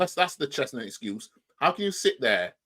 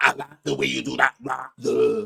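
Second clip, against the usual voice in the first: teasing, mocking put-on Lancashire accent; 4 dB louder than usual. Mocking the other speaker's claimed West London accent: imitation of their accent. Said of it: "That accent ain't no West London".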